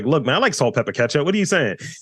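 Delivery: high, put-on, defensive, protesting tone. Retelling a reply to being told of no Baltimore accent: imitating own defensive retort. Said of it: "and I get defensive".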